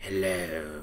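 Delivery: sleazy, skeezy put-on character voice. Trying out a voice for a character, skeezy put-on character voice. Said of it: "It's so skizzy".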